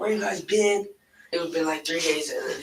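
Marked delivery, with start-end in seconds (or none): 0.0-0.9 angry voice, pitched up higher. Retelling what the uncle said at the door, imitating someone being mad. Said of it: "he was mad".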